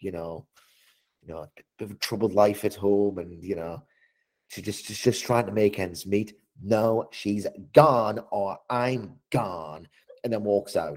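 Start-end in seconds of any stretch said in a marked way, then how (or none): 6.6-9.9 very slow speech, every word dragged out. Retelling a wrestling segment where Tiffany Stratton walks out: Tiffany Stratton voice. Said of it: "you doing your Tiffany Stratton voice".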